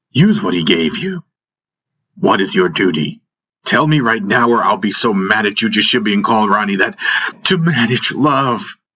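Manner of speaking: ordinary delivery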